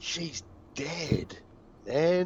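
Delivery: loud, hushed stage whisper. Speaking in character as Slapney about a dead girl: loud whisper. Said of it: "but in a loud whisper".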